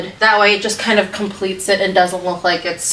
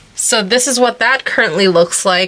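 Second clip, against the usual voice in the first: usual speaking voice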